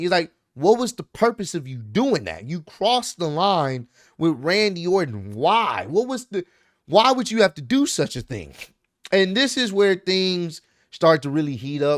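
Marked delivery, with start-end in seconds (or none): none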